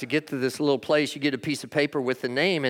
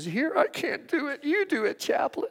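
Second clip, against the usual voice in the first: mock tearful sobbing, very high-pitched; 12 semitones higher, 4 dB quieter than usual. Retelling a daughter at a funeral giving up her speech: imitating someone sobbing. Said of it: "and she's sobbing".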